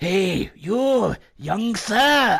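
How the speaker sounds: eerie, creepy, very slow, drawn-out high voice. Retelling a stranger calling out from a dark alley in Poland: imitating the creepy man's voice. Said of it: "I'll do the voice".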